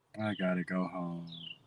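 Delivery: put-on very soft, low, hushed, glum, depressed murmur. Retelling how Ryan said it, mimicking Ryan's depressed tone. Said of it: "he said it all like he just was so depressed and so down".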